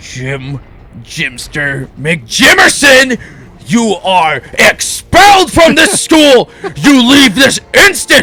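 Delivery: loud, slow, rising furious shout, each word drawn out. Telling a joke, the principal expels the boy: imitating an angry principal shouting. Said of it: "His mustache fell off his face in anger".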